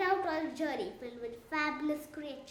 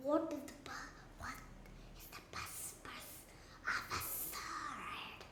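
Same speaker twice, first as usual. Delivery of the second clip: slithering sea serpent voice, barely whispered; 10 dB quieter than usual. The sea serpent asks them an ancient question, slithery sea serpent voice. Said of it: "that was in a very sl- slithery voice".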